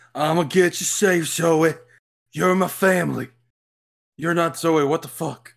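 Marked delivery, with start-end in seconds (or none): 0.2-3.3 put-on strong Creole-accented speech. Speaking to Zoe, who is family, in Joe Baker's strong Creole accent. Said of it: "With a strong Creole accent".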